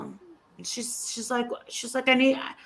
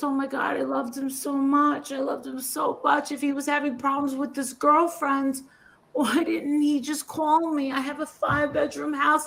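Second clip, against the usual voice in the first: put-on hysterical crying, sobbing; 3 semitones higher than usual. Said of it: "hysterical crying".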